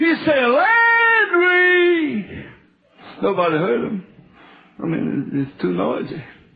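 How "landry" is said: very high, drawn-out, top-of-the-voice scream. Retelling how a young preacher screamed a name in loud worship: imitating a scream. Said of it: "screamed at the top of his voice".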